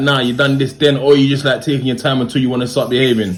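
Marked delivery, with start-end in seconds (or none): none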